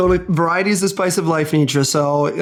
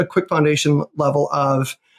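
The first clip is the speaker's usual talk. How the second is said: plain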